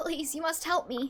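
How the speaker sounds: put-on childlike boy voice. Voicing game dialogue, playing a boy being chased, little boy voice. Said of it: "I have to do a little boy voice".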